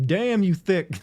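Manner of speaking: crude country trucker voice. Retelling a catcall from a guy in a truck: imitating a hick-sounding guy. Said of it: "really hick-sounding guy sitting in a truck".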